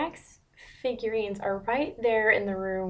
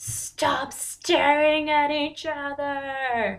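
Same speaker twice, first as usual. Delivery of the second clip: loud, high-pitched yelling with one word stretched long; 6 semitones higher, 5 dB louder than usual. Watching an adaptation, yelling at a character staring at John: yelling. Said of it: "I'm yelling at him".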